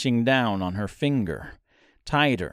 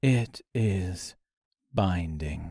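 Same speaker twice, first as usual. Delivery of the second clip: steady, composed, calm, low voice; 6 semitones lower, 3 dB quieter than usual. Reading a story, a character answers a startled question, calm. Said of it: "he said calmly".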